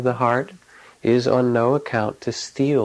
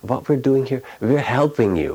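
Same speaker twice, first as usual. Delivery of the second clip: slight, put-on German accent. Retelling what a woman said when introducing herself to a man, kind of german accent. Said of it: "she said in her kind of German accent".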